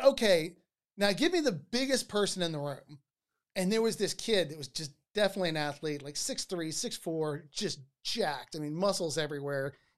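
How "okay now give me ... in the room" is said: ordinary talk, nothing marked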